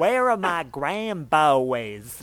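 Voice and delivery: put-on Southern old woman accent, "boys" drawn out. Listing a grandmother's memorable phrases, imitating grandma's Southern accent. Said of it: "people who with Southern accents".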